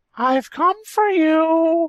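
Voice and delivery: very high-toned cartoonish squeak, you stretched out. Retelling a story where he meets a tree, in Mickey's high-toned voice. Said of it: "Mickey said in his high-toned voice".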